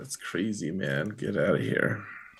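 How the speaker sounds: flat, level, unvaried monotone delivery. Acting out how he would react to it, in a monotone. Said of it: "Monotone and all".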